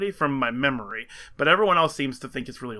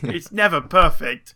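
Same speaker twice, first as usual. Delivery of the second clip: put-on British English accent, spoken louder; 7 dB louder than usual. Replying to talk about the weather, slipping into an english accent. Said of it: "That's [name]'s first English accent on the podcast".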